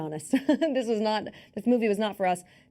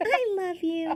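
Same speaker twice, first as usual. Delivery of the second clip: put-on creepy teddy bear voice, higher; 11 semitones higher than usual. Performing a segment on request as a creepy teddy bear: creepy teddy bear voice. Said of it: "Sarah's creepy teddy bear segment".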